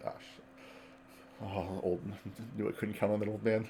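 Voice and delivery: muttering. A player voices Lyle hearing a commotion, muttering under his breath. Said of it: "He's gonna say under his breath".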